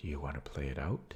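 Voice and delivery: hushed, very quiet half-whisper. Retelling what a chess opponent asked across the board: imitating someone half-whispering. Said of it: "leans in slowly over the board and whispers to me".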